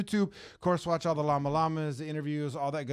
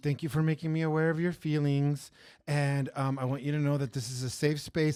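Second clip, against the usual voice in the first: put-on, super passive-aggressive, overly polite tone. Retelling what she said instead of speaking plainly: imitating a passive-aggressive tone. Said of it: "she was super passive aggressive".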